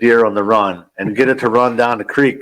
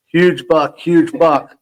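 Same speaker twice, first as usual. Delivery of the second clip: high, drawn-out, acted scream at full volume; 6 semitones higher than usual. Retelling spotting a deer during a hunt: imitating someone screaming. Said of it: "screaming at the top of my lungs".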